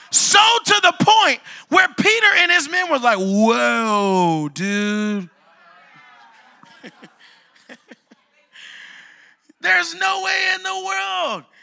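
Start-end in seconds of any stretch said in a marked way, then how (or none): 3.2-11.4 slow, creaky surfer-dude drawl with long drawn-out whoa. Retelling how Peter and his men reacted to the Holy Ghost, surfer dude voice. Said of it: "I sound like a surfer".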